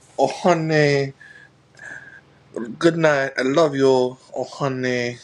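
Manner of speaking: slow, drawn-out nail salon lady voice. Imitating how nail salon ladies speak to a loved one. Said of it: "how they speak, be like".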